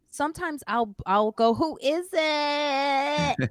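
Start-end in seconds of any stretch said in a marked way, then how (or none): 1.5-3.3 high, unhinged crazy voice, "it" drawn out. Retelling answering the building buzzer to package thieves, in a crazy-sounding voice. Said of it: "Like real crazy".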